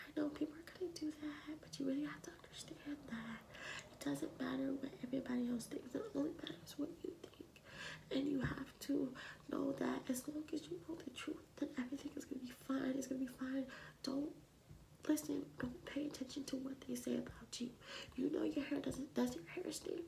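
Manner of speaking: high-pitched, soft, soothing whisper.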